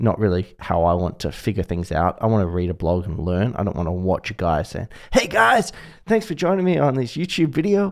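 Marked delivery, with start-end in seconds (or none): 5.1-7.9 high-pitched put-on American accent. Mocking a typical YouTube video intro: put-on American accent. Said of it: "you put an American accent on there".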